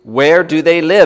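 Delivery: insistent, demanding. An officer repeats his question to Peter a second time, demanding. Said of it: "Demanded the officer a second time".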